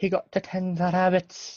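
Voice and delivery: terrible fake Canadian accent. Quoting a line to a co-host, the speaker puts on a terrible Canadian accent. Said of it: "That's a terrible accent".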